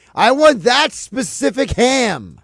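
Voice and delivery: play-acted, very slow, loud, drawn-out yell. Imitating the guy at the deli ordering ham: imitating a deli guy yelling. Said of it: "yells at you".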